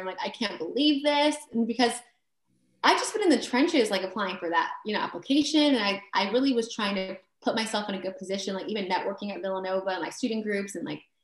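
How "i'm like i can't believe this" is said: hard sobbing, high-pitched bawling through the words. Retelling a phone call on speaker with her sister, speaker acts out her bawling. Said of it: "I'm just bawling my eyes out to my sister".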